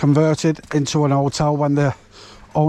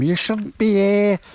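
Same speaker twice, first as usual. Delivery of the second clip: snippy put-on Scouse accent, pitched up; 6 semitones higher than usual. Retelling what a woman said when she came over, in a put-on Scouse accent. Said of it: "For a Scouser".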